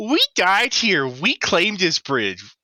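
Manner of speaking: very high, swooping, sneering, mocking voice. Game narrator voices the guy Arlen is looking at, in a very mocking tone. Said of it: "you hear him in just like a very mocking tone".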